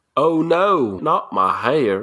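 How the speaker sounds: fake, put-on southern accent with drawl. Performing a short acted scene with two partners, in a put-on southern accent. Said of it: "it always ends up changing to like the southern accent".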